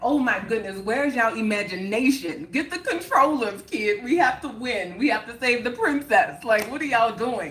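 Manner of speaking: giggly, laughing, playful delivery. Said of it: "I'm laughing, I'm cracking up".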